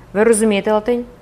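ordinary delivery

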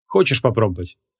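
ordinary delivery

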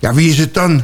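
pushy, eager tone. A narrator reads the impatient boy questioning the girl: impatient. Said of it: "Vroeg de ongeduldige jongen".

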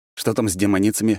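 ordinary delivery

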